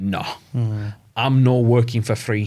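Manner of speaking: put-on convincing, well-done Scottish accent. Retelling his sales team's reply to his plan, Scottish accent. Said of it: "It's a good Scottish accent".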